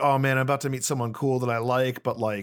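ordinary talk

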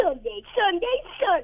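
high, swooping put-on voice with big sing-song swings. Asked by the host to try that voice, the guest does it anyway. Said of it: "Sunday for me in that voice?".

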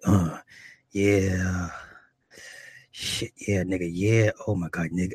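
low, slow voice, lingering "yeah". Retelling what a woman said during sex, imitating Miranda's deep voice. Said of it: "in her voice, and this is her actual voice".

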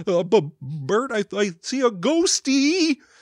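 high puppet-like voice. Describing Ernie always being afraid and speaking as him: Ernie voice. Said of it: "That's a really good Ernie voice".

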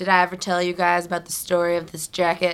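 put-on bragging tone. Imitating a friend showing off a jacket she won: imitating someone bragging. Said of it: "she brags about it".

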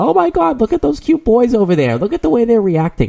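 very high, swooping, giddy gushing schoolgirl voice. Mocking how she sounded at the Home Run Derby, imitating a little high school girl. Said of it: "you sound like a little high school girl going".

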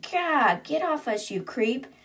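mock, high, mild shout-style outburst. Retelling a character shouting at a creature: retelling a shout. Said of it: "Nalina's shouting".

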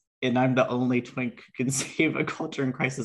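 talking while breaking into giggles. Introducing the podcast after a funny text, laughing while talking. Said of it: "I'm sorry I'm laughing".

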